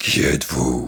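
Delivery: growling giant voice. Reading a children's story aloud, the giant growls: giant growling. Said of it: "gronda le géant".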